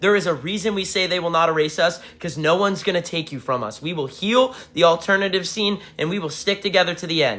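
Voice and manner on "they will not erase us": ordinary talk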